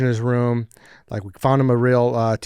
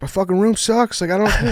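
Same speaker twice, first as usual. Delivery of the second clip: acted, high-pitched, distraught, at-a-loss outburst; 9 semitones higher, 3 dB louder than usual. Retelling how someone reacted to his terrible room: imitating someone distraught.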